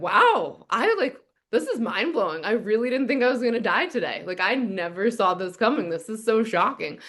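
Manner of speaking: sardonic, swooping, sarcastic put-on astonishment. Retelling own inner thoughts while lying staring up at the sky: sarcastic Larry David-esque put-on tone. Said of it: "a sarcastic Larry David-esque inner monologue".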